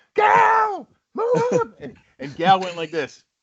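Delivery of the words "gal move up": shrill, high, screamed shout. Retelling someone screaming from the box at Gal, retelling a scream. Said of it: "he's screaming from the box".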